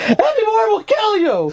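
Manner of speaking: very high yell, tearful, on the verge of crying. Retelling how the nurse in charge of the drip yelled at them: imitating a nurse yelling while almost crying. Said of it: "yells at me, but she's almost crying".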